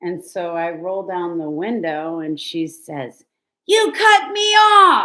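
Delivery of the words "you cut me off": piercing, shrill, very loud high yelling. Retelling an argument with a woman who pulled up next to the car, imitating her yelling. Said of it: "and she's yelling".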